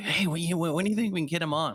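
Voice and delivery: high, fast, giddy schoolgirl eagerness. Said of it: "You're like".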